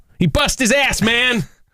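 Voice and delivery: put-on American accent, pitched very high. Coaching another speaker's line, the speaker demonstrates it in an American accent. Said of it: "Not good enough. Do it again".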